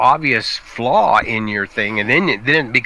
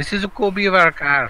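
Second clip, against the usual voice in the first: fake German accent slipping into Scottish, higher; 8 semitones higher than usual. Acting out a Porsche person questioning a copied car: put-on German accent slipping into Scottish. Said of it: "I slipped from German to Scottish in that accent".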